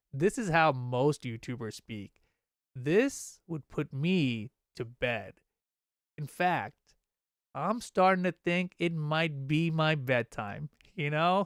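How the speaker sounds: very slow, deliberate, drawn-out speech. Showing chat how slowly most YouTubers speak: speaking very slowly. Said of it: "You see how slow I'm talking now?".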